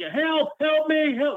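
mock very high, drawn-out, panicked pleading cries. Retelling a video of a voice shouting: imitating panicked cries for help. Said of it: "really panicking, like someone needs help".

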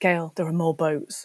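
put-on whispered voice. Recounting how someone leaned in and whispered to them, retelling a whisper. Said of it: "have leaned in and whispered to me".

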